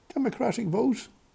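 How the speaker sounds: words breaking into laughter, pitched very high. Speaker recounting history, asking a question: laughing. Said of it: "Sorry, I'm laughing".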